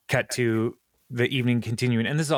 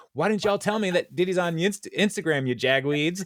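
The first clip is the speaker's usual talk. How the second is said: play-acted, pitched-up yelling; 7 semitones higher than usual. Retelling how Mona Lisa yells at everybody, imitating Mona Lisa yelling. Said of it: "And then she yells at everybody".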